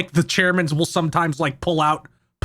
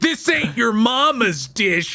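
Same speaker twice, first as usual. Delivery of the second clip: put-on high-pitched yell, full of bluster; 6 semitones higher than usual. Imagining a cook who ruins every dish: imitating Rocco Bodie yelling. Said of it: "and he yells, like".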